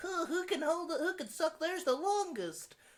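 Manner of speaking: very high, ridiculing, mocking put-on voice. Calling Warheads a gimmick candy, the speaker slips into a mocking voice. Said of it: "The hell was that voice?".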